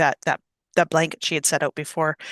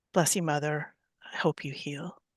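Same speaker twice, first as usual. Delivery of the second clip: low, soft, whispered under the breath. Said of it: "just kind of lowly under her breath in Elven".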